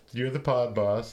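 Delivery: normal talking voice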